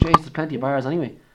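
ordinary delivery

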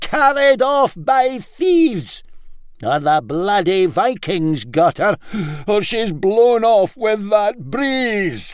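put-on hoarse, slurred, high-pitched bellowing shout. Narrator voicing the laird as he surges into the court: hoarse, slurred bellow. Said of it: "His speech was hoarse and slurry".

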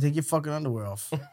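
harsh, domineering voice. Acting out what one says in bed: imitating saying it mean. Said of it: "I say it like that".

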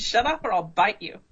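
ordinary delivery

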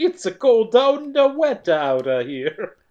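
stock Italian caricature voice. Recounting what one of the group said in the game, Italian stereotype voice. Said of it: "goes to like an Italian stereotype voice".

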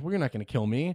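plain

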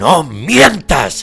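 loud roaring bellow.

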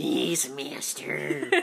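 clumsy, creaky, raspy, servile hunchbacked-henchman voice. Answering a remark on the Igor voice with a line: bad Igor voice. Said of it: "a really bad, like, Igor voice".

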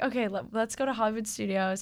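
plain

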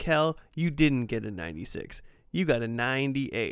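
usual speaking voice

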